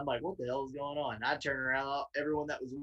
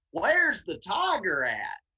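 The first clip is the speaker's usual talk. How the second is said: put-on loud, slow, very heavy southern accent; 6 semitones higher, 5 dB louder than usual. Retelling walking into a gas station and asking a circle of people, southern voice. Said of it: "my my most southern voice kicked on".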